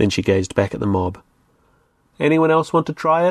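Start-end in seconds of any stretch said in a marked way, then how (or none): 2.2-3.3 loud, high, challenging call. She turns from her companion to address the mob, loudly. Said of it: "she said loudly".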